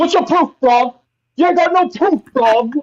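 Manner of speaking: very high, demanding, challenging voice. Doing an impression of Django for a friend: Django impression. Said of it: "my Django impression".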